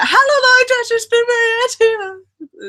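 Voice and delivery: very high, drawn-out, slow, teasing mocking voice. Showing how she makes fun of Maria: mocking impression of Maria. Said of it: "That's my impression of Maria whenever I wanna, like, make fun of her".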